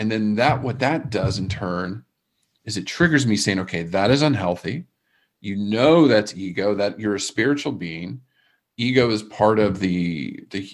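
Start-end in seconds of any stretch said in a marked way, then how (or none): none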